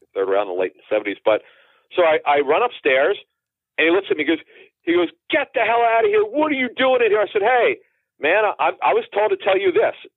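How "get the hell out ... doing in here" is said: acted-out yelling outburst, pitched up high. Speaker retells a former Rams player yelling at him when he ran upstairs, retelling a yell. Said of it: "he yelled".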